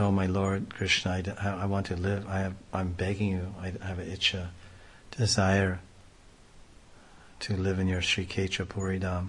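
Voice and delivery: normal talking voice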